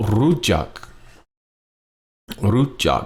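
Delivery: rujak with high tone, then low tone. Demonstrating the tones of a Thai word, high tone then low tone. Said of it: "First half of the word is high tone".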